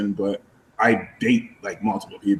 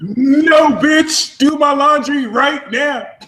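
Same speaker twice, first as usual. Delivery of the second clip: mock, very high, shrill, furious angry yelling; 14 semitones higher, 3 dB louder than usual. Retelling how a friend screamed at the speaker, retelling an angry scream. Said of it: "he like screamed at me".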